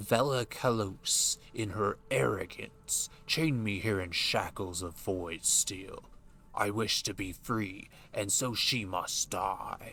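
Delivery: deepened voice, somewhat soothing. Voicing a character's dialogue aloud: trying for a lower voice. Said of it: "I'm trying to use a lower voice".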